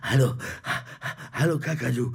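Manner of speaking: breathless, panting, puffing out-of-breath voice. On a children's podcast, a character arrives and greets another, out of breath. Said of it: "du bist ja ganz außer Atem".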